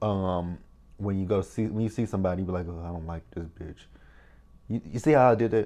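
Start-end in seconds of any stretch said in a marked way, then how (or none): 2.8-3.8 barely audible, very quiet mumble under the breath. Seeing someone you don't like, you say it: mumbled under the breath. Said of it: "You mumble. It's kind of like you mumble it under your breath".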